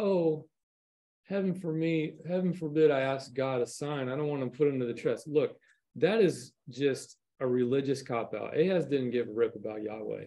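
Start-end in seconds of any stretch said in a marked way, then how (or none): 0.0-5.3 put-on pious, self-important, sanctimonious false humility. Discussing scripture, the speaker acts out Ahaz: Ahaz, mock-pious and vainglorious. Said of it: "in this like religious, awful kind of, you know, vainglorious way is like".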